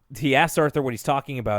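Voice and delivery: plain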